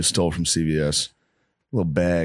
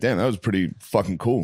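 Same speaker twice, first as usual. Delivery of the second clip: usual speaking voice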